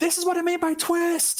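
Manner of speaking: very high battle scream, screaming yell. A tabletop player's character twisting a dagger into a foe, screaming. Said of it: "just scream at".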